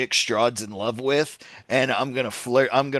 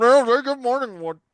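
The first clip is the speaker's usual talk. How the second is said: put-on muffled, stuffed-mouth speech; 11 semitones higher, 4 dB louder than usual. Joking about the other way it went: imitating Eric with a mouthful of sap. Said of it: "the other way is Eric with a mouthful of sap".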